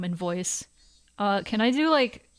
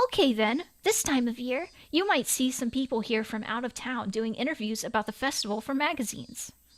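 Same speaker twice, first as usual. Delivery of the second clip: put-on high-pitched anime cartoon voice; 3 semitones higher, 4 dB quieter than usual. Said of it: "I'll do the high anime voice".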